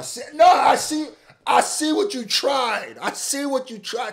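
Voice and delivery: high-pitched, loud shouting.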